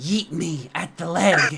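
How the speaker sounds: whispered speech. Voicing a character sneaking onto an ally's back: whispering into an ear. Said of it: "just whisper into his ear".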